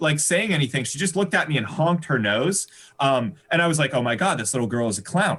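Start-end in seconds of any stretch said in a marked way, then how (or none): none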